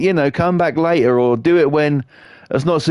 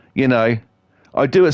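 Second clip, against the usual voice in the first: usual speaking voice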